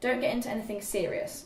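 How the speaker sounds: ordinary delivery, nothing marked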